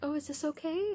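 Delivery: very high, sugary, sweetsy, timid voice. Describing a voice she sometimes uses, the speaker demos a high-pitched sweetsy voice. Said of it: "a high pitched sweetsy voice".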